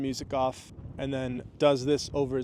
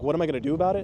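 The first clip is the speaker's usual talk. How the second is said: put-on baffled, puzzled tone; 3 semitones higher, 4 dB louder than usual. Retelling his reply to someone's question: mock-puzzled questioning. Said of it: "I said it like that, like a, what are you talking about kind of thing?".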